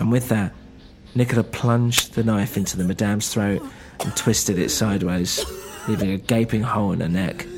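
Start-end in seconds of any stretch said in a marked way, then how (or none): none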